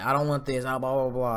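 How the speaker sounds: ordinary talk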